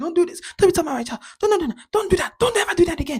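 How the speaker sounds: very shrill, high, furious, angry screaming. Retelling how an older woman snapped at them: imitating a woman screaming angrily. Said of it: "getting aggressive and violently, like, loud, screaming".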